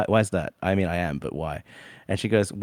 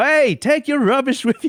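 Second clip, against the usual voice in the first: mock very high, shrill, loud yell; 5 dB louder than usual. Retelling how mum yelled out the window at someone: imitating someone yelling. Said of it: "she just yelled straight out the window".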